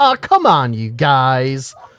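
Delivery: slow chiding tone, word guys drawn out. Mocking a female radio co-host interrupting two hosts: imitating a female co-host. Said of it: "so she can interject things like".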